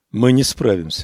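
usual speaking voice

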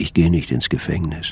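usual speaking voice

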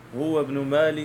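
ordinary talk, nothing marked

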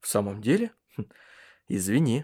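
plain

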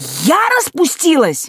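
outraged, boiling over. A daughter answers her father, who has threatened to beat her, boiling over with anger. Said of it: "вскипела я".

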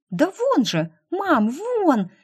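bouncing with excitement, eager, excited. Polya shows her mother Irina where the naked goat is, bouncing with excitement. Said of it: "Подпрыгивая от возбуждения".

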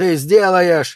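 shrill, loud, bellowed yell. Narrator reads Dew answering Murray over the phone: yelling into the phone. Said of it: "заорал Дью в трубку".

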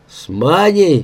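growled, growling voice. Yegorych answers Gleb's question; growled. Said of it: "прорычал Егорыч".

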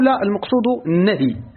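plain

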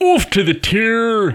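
put-on, very slow, very high Scottish accent, "tour" drawn out. A professional actor giving an accent a try, put-on scottish accent. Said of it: "can you do a Scottish accent? ... let me give it a".

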